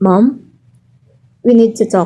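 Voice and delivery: anxious, worried, very loud voice. In an advertisement scene, addressing Mom, sounding worried. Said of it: "You sound so worried".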